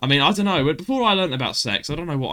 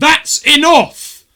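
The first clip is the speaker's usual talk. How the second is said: screamed at full volume, very high; 12 semitones higher, 11 dB louder than usual. Retelling how the teacher would scream at the class: imitating Mister Baines screaming. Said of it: "he would either scream at you".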